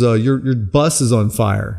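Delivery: ordinary delivery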